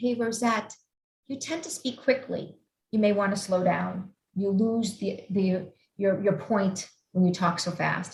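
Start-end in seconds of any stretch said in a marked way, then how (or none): none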